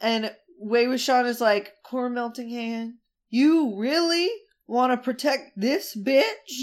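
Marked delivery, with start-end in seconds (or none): 1.8-6.6 put-on spooky boyish villain voice. Retelling a villain's line from a scene: imitating a spooky boy voice. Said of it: "Doing his spooky boy voice".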